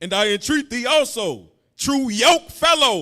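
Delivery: firm, full-voiced, loud, strong reading voice. Asked to read the scripture again, the reader reads it loud and strong. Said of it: "Say it loud too and say it strong".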